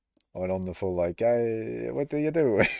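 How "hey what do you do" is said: light Italian accent slipping in, words drawn out. Recounting what they said, the speaker redoes the line in a slight italian accent. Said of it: "I slipped in a little bit of an Italian accent there".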